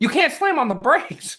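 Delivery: a little high and cartoonish. The speaker quotes Shane's advice about braking the van: a little like Mickey Mouse. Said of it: "that sounded a little like Mickey Mouse".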